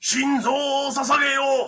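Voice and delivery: high, loud, belted, commanding shout.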